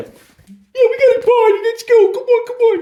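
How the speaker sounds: very high put-on talking dog voice. Talking to a dog who is ready to go, voicing the dog. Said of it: "I also do the voices for the dogs".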